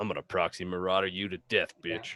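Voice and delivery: mock muttering under breath. Imagining a game bot threatening its opponent: imitating a muttered threat under breath. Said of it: "under his breath to himself".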